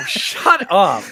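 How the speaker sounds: shrill, very high, loud, cheeky and sassy. Responding to another speaker's remark about a game: sassy. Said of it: "why are you so sassy when you respond?".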